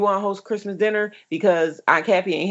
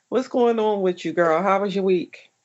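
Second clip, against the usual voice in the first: usual speaking voice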